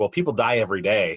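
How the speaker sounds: dry, dead-straight deadpan delivery, no fuss. Retelling a scene, voicing a character's reply to the manager, retelling it deadpan. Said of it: "just deadpan".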